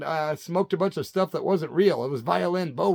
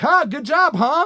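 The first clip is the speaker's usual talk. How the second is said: imitated maniacal laugh, higher and louder; 11 semitones higher, 8 dB louder than usual. Retelling how a friend laughed after a robbery: imitating maniacal laughter. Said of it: "he's laughing like it's maniacal".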